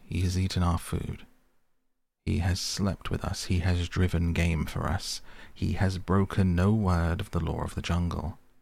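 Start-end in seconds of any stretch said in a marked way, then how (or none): none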